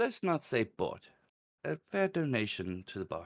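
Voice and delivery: put-on Welsh-accented character voice. Game master voicing the tavern barkeep as a player offers gold, welsh accent. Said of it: "but he is Welsh in his accent. / the man pulls out 2 wooden tanards and he plops them down in front of you, / Barkeep, / but he is Welsh in his accent".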